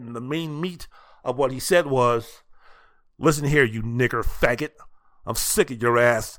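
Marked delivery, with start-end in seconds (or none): 3.2-6.4 imitated menacing voice, pitched lower. Retelling how Liston threatened Ali after slamming him against the wall: imitating a menacing "I'm gonna kill you" voice. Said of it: "that "I'm gonna kill you" voice".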